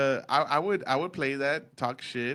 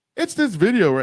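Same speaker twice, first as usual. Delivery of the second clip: put-on news anchor voice, higher and louder; 5 semitones higher, 8 dB louder than usual. Complaining to a friend about a video, in a news anchor voice. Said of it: "I'm gonna put on my news voice".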